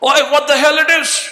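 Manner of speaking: mock very high, shrill scream at top volume. Retelling a young man on a crowded train: imitating a scream at full voice. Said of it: "He screamed at the top of his voice".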